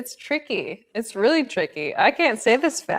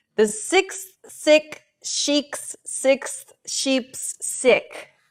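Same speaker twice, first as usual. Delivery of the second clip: slow, careful, deliberate delivery, each word separated; 3 semitones higher than usual. Attempting a hard tongue twister, reading it slowly. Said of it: "I'm going to have to read it slowly".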